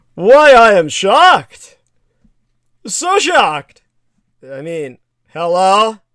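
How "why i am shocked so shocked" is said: loud, high, shrill, swooping fake outrage, sarcastic. Answering critics of an arms deal, feigning surprise: sarcastic mock shock. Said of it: "the first thing I'll say quite sarcastically is".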